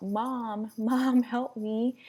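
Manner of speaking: acted-out scream. Recounting waking unable to move and calling for Mom: retelling a scream for help. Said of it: "So I'm trying to scream out".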